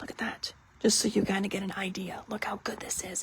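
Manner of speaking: secretive, hushed, very quiet whisper. Showing viewers the back of an item early, whispering. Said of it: "I don't know why I'm whispering".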